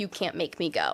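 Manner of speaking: acted hysterical screaming. Recalling refusing to go after a call with the psychiatrist, retelling a hysterical scream. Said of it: "being hysterical, like kicking and screaming".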